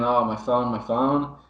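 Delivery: ordinary delivery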